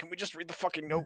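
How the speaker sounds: high, retching voice, words choked out between heaves. Retelling a character's complaint from the corner: imitating someone half retching. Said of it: "half hurling in the corner".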